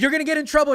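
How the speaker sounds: very high, very loud, shrill, assertive, stern tone. Retelling how a mom scolds a teenager: imitating an assertive mom. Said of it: "real assertive".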